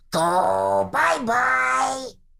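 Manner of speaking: very high, rough, creaky voice, "go" drawn out. Doing a Muppet voice by loosening it: Animal voice. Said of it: "it was Animal".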